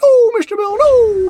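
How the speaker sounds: acted panicky claymation voice. Imitating a claymation character's cry: Mister Bill voice. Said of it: "he would say".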